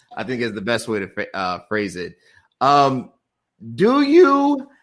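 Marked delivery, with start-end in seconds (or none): 3.7-4.6 voice breaks, cracking very high. A host asks a guest a question about relationships; voice cracking. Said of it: "my voice just cracked when I said that".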